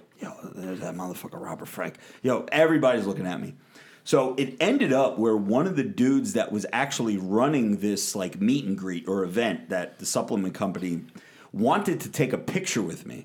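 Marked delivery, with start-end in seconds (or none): 0.2-2.5 put-on whispering, lower-pitched and quieter. Retelling what people whispered when they saw the speaker: imitating people whispering. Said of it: "you could just hear the whispers".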